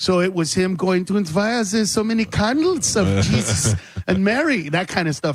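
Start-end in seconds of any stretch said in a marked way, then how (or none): 1.3-4.7 put-on German accent, swooping and sing-song. Retelling his bit about Elon Musk checking people's houses, in a put-on German accent. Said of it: "doing it with a with with a German accent".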